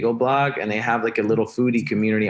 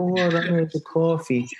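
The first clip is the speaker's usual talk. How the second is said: put-on, slow, high-pitched New Jersey Israeli accent; 7 semitones higher than usual. Talking about Israeli mothers, imitating mom's New Jersey Israeli accent. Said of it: "my mom has like this New Jersey Israeli accent".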